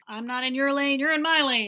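mock heated tone, loud and high-pitched.

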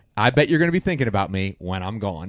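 normal talking voice

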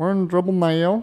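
put-on foreign accent blended with a Southern Georgia twang. Finishing the podcast opening as a joke: Borat voice with Georgia twang. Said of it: "It sounds like if Borat grew up in Georgia".

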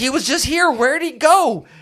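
very high agitated worrying. Narrating the parents who suddenly can't find their boy: nervous, agitated voices. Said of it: "And they're like agitated. Like you hear like in their voice, like they always get nervous whenever you're not like right there where they can see you. And they had that same nervousness to their voice. ... You got to go get him and bring him here because we don't see him nowhere".

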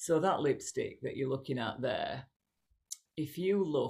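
voice brought right down. Re-enacting how they talked about a lipstick: dropped voice. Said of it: "I'd drop my voice and I'd go".

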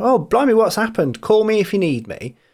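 put-on, feigned, slightly sympathetic concern. Retelling own reply to a worrying message, imitating feigned sympathy. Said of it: "pretend to like Darren and be a bit sympathetic".

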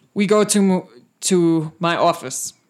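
loud, slow, booming orc priest voice. Voicing the Orc High Priest scolding a guard: Orc High Priest voice. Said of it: "the Orc High Priest looks at him and, and he says".

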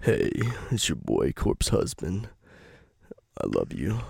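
deep put-on voice, dropped very low. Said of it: "doing an impression of him".

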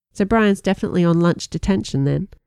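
ordinary delivery

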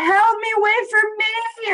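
mock yelling. Retelling being the slowest kid left behind by running cousins, retelling a yell. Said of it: "I'm like yelling like".

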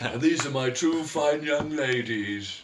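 put-on old, rich tycoon character voice. Improv scene, a character arriving with two young girls, old hawaiian billionaire voice. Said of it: "do the old Hawaiian billionaire voice".

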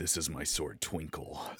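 brooding, unhurried heroic voice. Imagining a line for a live action Drizzt: brooding Drizzt voice. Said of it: "brooding voice that I always hear him have saying".

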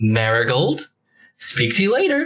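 tinny voice that sounds far off. Ardane's voice comes through the glowing runes to Marigold, tinny Ardane voice. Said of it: "you hear this sort of tinny".

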